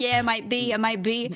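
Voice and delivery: put-on Italian accent. Retelling answering a new acquaintance who asks if he's italian: italian accent. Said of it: "And I say it in like, you know, an accent".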